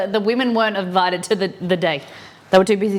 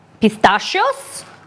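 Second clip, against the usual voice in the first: put-on cartoonish Italian voice. Saying a word for a joke in a Mario voice. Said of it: "That was my Mario impression".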